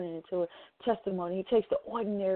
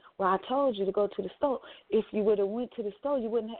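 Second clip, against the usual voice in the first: normal talking voice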